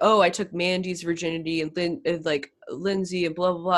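ordinary talk

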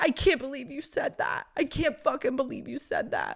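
high, tearful, upset weeping voice. Retelling a partner's reaction to hearing about past lying and cheating, imitating someone weeping. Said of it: "And then Renee starts weeping".

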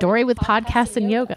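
ordinary talk

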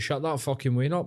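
acted, light, mild irritated jeering outburst. Acting out a passenger shouting about a crying baby: imitating someone shouting. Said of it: "You gotta start shouting out".

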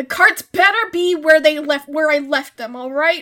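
shouting. A player says their character yells while walking downstairs, yelling. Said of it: "I'm gonna yell".

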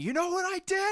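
very high, loud, shrieking scream. Recounting a scene where a man with a crowbar screams at a woman, imitating a scream.

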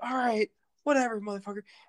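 put-on high, explosive, furious angry outburst. Retelling a movie scene, imitating someone exploding in anger. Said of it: "he explodes on him".

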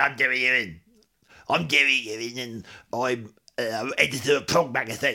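put-on character voice, cross and annoyed. Asked to recall an impression of the editor of Prog Magazine, do the Jerry Ewing voice. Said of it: "What was my Jerry Ewing voice?".

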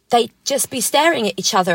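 ordinary talk

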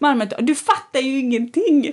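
mock shouting, re-enacted yelling. Speaker re-enacts storming off after an argument, retelling own shout. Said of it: "Och så skriker jag så här".

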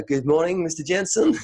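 put-on, very thick Dutch accent. Retelling a visit to a man's office, the speaker quotes his greeting in a very Dutch accent. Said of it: "in his very Dutch accent".

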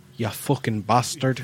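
put-on Irish accent. Saying a favorite curse the way an Irish person would: Irish accent. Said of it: "I like hearing an Irish person say bastard".

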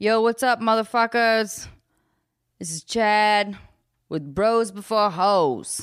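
put-on male dude-bro voice, total bro style. Pitching a new podcast idea, in a put-on male voice as Chad. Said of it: "I got to work on my male voice".

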